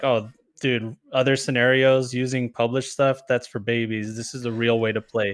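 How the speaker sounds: ordinary talk, nothing marked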